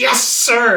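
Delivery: snide loud sarcasm. A preacher retells a team member answering his instruction, mock-sarcastic 'Yes, sir'. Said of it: "real sarcastic like".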